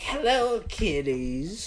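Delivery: decrepit, put-on horror-host voice. Joking about an old man looking like the Crypt Keeper: Crypt Keeper voice. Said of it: "looks like the goddamn Crypt Keeper".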